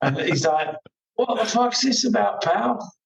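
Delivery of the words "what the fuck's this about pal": put-on comic northern English accent, pitched very high. Retelling a road incident, quoting a man in a funny northern accent. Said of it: "in his funny northern accent".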